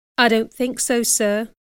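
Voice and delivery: ordinary delivery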